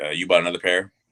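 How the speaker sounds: ordinary delivery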